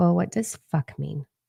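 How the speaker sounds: usual speaking voice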